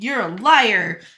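put-on accusing tone. Retelling a story where a character rounds on another: retelling an accusing line. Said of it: "she rounds on him and is like".

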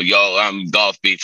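put-on American accent. Describing how the Golf Beef videos sounded, imitating their American accent. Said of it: "with their American accent".

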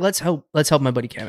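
plain

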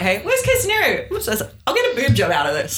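lighthearted, animated, joking tone. Speaker quotes their own reply to the girl who greeted them, retelling a joking remark. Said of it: "And jokingly this whole way through".

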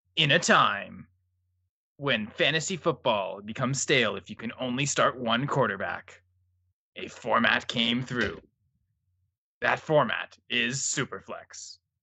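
epic action movie narrator voice. Setting the scene after another speaker asks: action hero narration voice. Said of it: "I need you to do it in an action hero narration voice".

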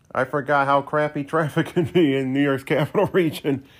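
laughing, chuckling through words. Complaining about bad traffic coming home, laughing while talking. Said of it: "I don't know why I'm laughing there".

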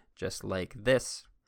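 slowed-down, focused, deliberate pace.

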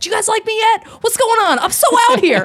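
very high, loud patter pushed way up. Retelling an improviser's bit during Deadpool promos: Ryan Reynolds as Deadpool voice. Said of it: "Ryan Reynolds playing Deadpool".

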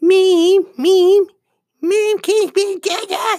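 put-on nasal cartoon child voice. Showing listeners another voice: Cartman voice. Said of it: "that's Cartman one".

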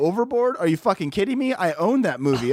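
ordinary talk, nothing marked

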